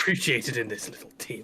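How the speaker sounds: acted grumbling mumble. Speakers act out what they mutter as someone falls asleep, retelling muttering under breath. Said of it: "muttering under my breath".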